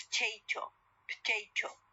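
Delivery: potato said with its weak vowel dropped. Showing learners connected speech, the vowel after P dropped. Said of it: "But in connected speech".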